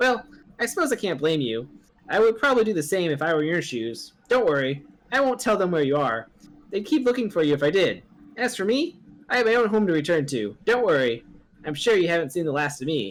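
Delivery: high, put-on cat voice.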